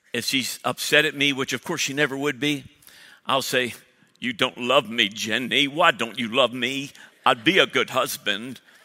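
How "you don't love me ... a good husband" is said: put-on slow Southern voice. Showing how he speaks to his wife: Forrest Gump voice. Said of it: "I'll speak to her in the voice of Forrest Gump".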